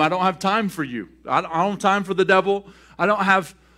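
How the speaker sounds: ordinary talk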